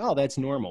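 ordinary talk

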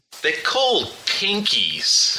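revolted, grossed-out tone. Showing how the word should sound when asked: disgusted tone. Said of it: "Let me hear how you would have said pinkies".

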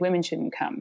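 usual speaking voice

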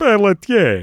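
put-on vampire count voice. Asked how a Dracula would say it, answering in a Dracula voice. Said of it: "How would a Dracula say it".

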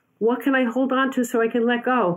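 terrified scream. Retelling a night jump from a platform holding a rope: retelling a scream. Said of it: "And I screamed".

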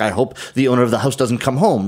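normal talking voice

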